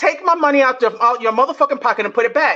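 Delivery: ordinary talk, nothing marked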